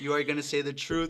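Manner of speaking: put-on angry outburst. Retelling an argument with a girl in mock court: imitating own angry outburst. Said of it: "I just went off on her".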